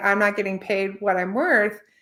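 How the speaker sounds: ordinary talk, nothing marked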